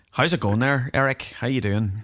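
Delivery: put-on thick, heavy Northern Irish accent. Retelling greeting a man from Belfast off the stage, in a thick Northern Irish accent. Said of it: "I laid it on a bit thick".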